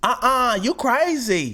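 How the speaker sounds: voice pitched very high.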